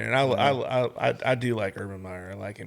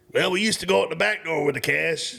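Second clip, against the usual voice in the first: put-on Louisiana coach voice; 6 semitones higher, 4 dB louder than usual. Retelling a press conference question and answer in Coach O's voice. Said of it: "I'm gonna do the voice 'cause I love the voice".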